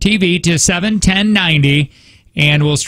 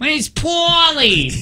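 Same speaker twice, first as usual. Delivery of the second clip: very high put-on New Jersey accent, stretched words; 11 semitones higher than usual. Coaching a guest to try a Jersey accent, demonstrating a New Jersey accent. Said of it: "that's not bad".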